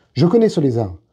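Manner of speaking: ordinary delivery, nothing marked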